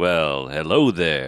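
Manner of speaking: slick, smarmy, charming, laid on thick. Quoting a game hero's entrance line: smarmy Lando Calrissian voice. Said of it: "he's so fucking smarmy and awesome".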